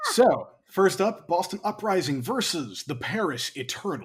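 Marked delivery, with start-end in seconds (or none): 1.3-4.1 fighting game versus-screen announcer voice. Announcing the first match to predict on the show: fighting game announcer voice. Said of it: "like fighting game announcer voice".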